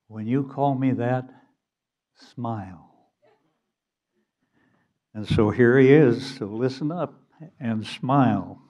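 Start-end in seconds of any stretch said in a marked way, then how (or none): 0.2-2.9 mock steely, calm voice, soft. Retelling a poker-game standoff from a story, quoting the Virginian in a steely, calm voice. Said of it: "in a steely, calm voice said".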